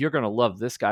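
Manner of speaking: ordinary talk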